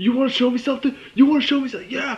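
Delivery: high, loud yelling. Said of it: "yelling at him".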